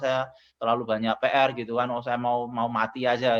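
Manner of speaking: usual speaking voice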